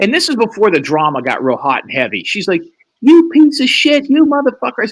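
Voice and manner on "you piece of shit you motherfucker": very high, shrill screaming, sustained. Retelling a late-night phone call from an angry caller: imitating someone screaming. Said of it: "what are you screaming at me?".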